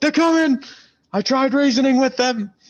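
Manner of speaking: very high, loud yelling. A player has his character turn back to warn others, yelling a warning. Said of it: "I'm gonna start yelling".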